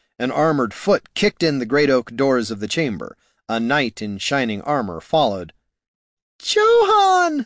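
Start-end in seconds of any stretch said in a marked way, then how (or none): 6.4-7.5 very high shriek of delight. The princess greets a knight who bursts into the chamber, shrieking in delight. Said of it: "the princess shrieked in delight".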